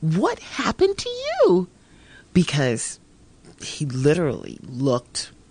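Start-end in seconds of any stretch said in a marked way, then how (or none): 0.0-1.7 very high, swooping, utterly disbelieving tone. Retelling meeting an old acquaintance at a parade: incredulous voice. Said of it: "in a very kind of incredulous kind of voice".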